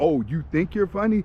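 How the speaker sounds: ordinary talk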